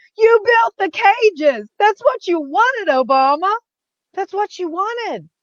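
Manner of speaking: mock high, shrill screaming. Retelling what was yelled at the TV: imitating screaming at the TV. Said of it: "screaming at the T V".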